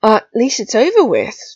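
bracing, encouraging tone. Draco speaks to Rigel after her failed quiz, bracing. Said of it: "Draco said bracingly".

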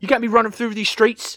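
very high, loud, put-on British accent. Echoing a Londoner scolding a giant robot, in an offensive put-on British accent. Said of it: "that is an offensive accent".

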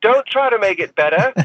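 put-on Australian accent, pitched way up. Retelling what the director called out between takes: imitating Simon Windsor's Australian accent. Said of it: "Australian bloke".

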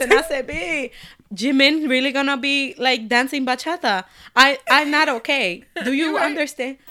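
heavy Latin American Spanish accent.

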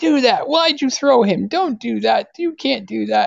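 mock, very high-pitched, yelled outburst. Retelling how a mother yells at wrestling on TV: imitating someone yelling at the TV. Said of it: "she's always yelling at the T V, going".

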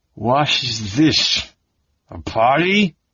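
put-on angry drunken growl. A drunk staggers into a room and addresses the people there, growling. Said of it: "he growled".

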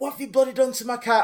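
put-on Irish accent. Retelling what a little old lady said after a car crash, irish accent. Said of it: "Irish accent?".

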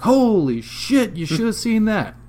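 shrill, very high, loud yell. Telling a story, quoting a man who yelled after the lights stopped, retelling a yell.

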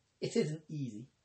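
ordinary delivery, nothing marked

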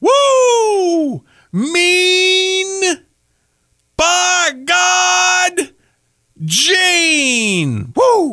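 high, slow, stretched-out whooping woo. Trying once again to shout a wrestler's catchphrase: Ric Flair impression. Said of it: "I couldn't do Ric Flair like that".

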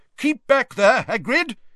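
shrill, high, loud yell. Reading a wizard near the fence yelling to someone: yelled. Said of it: "yelled a wizard near the fence".

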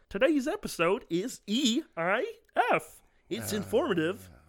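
put-on high kids' cartoon character voice. Asked on a recording to sound like a cartoon character: cartoon character voice. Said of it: "I'll do a cartoon character".

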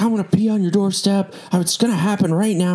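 put-on, very high, enraged, furious voice. Speaker retells what an upset woman at the door said, imitating an angry woman. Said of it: "she starts like getting very angry".

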